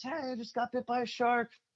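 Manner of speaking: mock very high-pitched, yelled holler. Retelling paddling in after a shark bite and calling to friends, retelling a yell to friends. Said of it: "I'm yelling at my friends".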